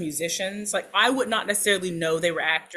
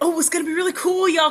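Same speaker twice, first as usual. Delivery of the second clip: put-on, very high, eager, excited gushing; 10 semitones higher, 5 dB louder than usual. Imitating a friend hyping an upcoming show: mock-excited Steve voice. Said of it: "I'm doing the Steve voice".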